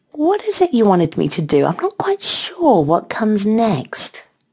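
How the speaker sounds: sweet, high and sing-song. A woman answers her moaning partner's plea, sweetly. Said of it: "Mel asked sweetly".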